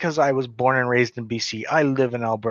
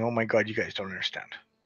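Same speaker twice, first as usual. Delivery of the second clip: mock crying, quieter and faster; 2 semitones lower, 7 dB quieter than usual. Describing how they fought back, contrasting it with mock crying. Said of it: "didn't come out and me crying".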